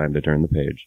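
muttered under breath. Playing your character stepping into the book so no one else hears, muttered under breath. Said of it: "under my breath so no one else can hear me".

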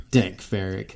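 mock muttering under breath. Retelling what a Mandalorian says in the show: imitating muttering under breath. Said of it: "she says kind of under her breath".

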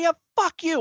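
high, yelled shouting-match retort. Retelling the girlfriend's screaming match with a stranger, retelling a screaming yell. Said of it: "in a screaming match with some dude".

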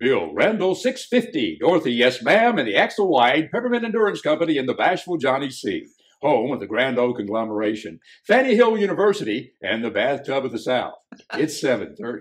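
very loud, high, booming radio announcer patter. Asked for a sample of his radio broadcaster voice, radio announcer voice. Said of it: "Give us your radio voice".

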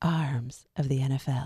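drawn-out late-night radio voice, every word stretched. Repeating the segment title after being asked to do it again: late-night Delilah voice. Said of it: "That's my best, like, late night Delilah".

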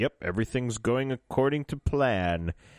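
ordinary talk, nothing marked

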